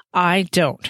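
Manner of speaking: sharp tone, said sharply. Matthew contradicting the narrator's trust in another man, sharply. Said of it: "Matthew said sharply".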